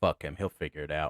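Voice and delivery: mock angry dismissive man voice. Speaker retelling what the guy they came to relieve said about a trooper, imitating a pissed-off man. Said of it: "just pissed off his mind".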